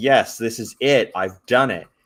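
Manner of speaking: ordinary talk, nothing marked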